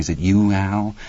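plain

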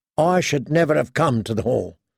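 usual speaking voice

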